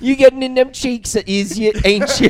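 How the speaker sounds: fake British accent, squeaky and very high. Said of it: "I like a British accent".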